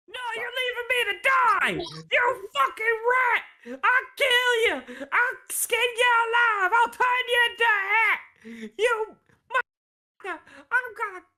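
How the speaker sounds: enraged, furious, very high shrieking screams. As the party is escorted out, a deep gnome left behind screams: furious screaming. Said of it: "this deep gnome still screaming".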